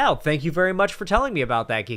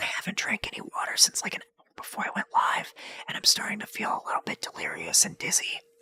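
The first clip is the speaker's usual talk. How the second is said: very soft, dramatic whisper; 3 semitones higher, 7 dB quieter than usual. Telling viewers about not drinking water, for dramatic effect: whispering. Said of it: "I don't know why I whispered that".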